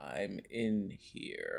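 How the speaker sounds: possessed demon voice with swooping pitch. Retelling telling someone in the bathroom to stay out: imitating the girl from The Exorcist. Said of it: "I sounded like the girl from The Exorcist".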